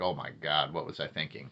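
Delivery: mock regretful tone. Voicing the figure on a card: mock regretful. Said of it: "you see the regret on this person here".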